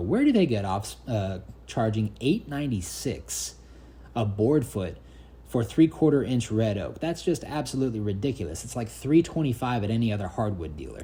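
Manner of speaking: plain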